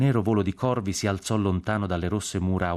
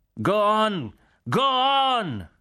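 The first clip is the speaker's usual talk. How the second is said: slow, swooping, high yell, stretched out; 14 semitones higher, 3 dB louder than usual. A general urges the column to move on: shouting. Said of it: "gridava il generale Cork".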